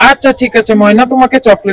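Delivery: deep father voice.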